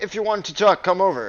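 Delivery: very loud, carrying, high-pitched voice. Voicing a character who calls someone over, pretty loud voice. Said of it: "He says in a pretty loud voice".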